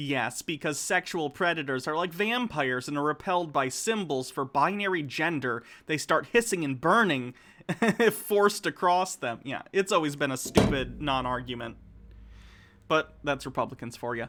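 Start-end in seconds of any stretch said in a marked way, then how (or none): none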